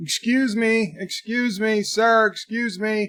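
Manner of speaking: put-on courteous, high, drawn-out polite yell. Retelling a neighbor chasing the garbage man: imitating someone yelling politely.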